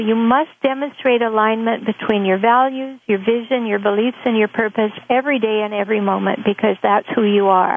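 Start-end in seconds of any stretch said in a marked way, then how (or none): none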